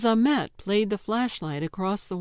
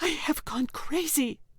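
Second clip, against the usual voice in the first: high, sharp, hissed whisper; 7 semitones higher than usual. Reading a story aloud, the narrator voices Gelder speaking to Ahmet, hissed. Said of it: "Gelder hissed".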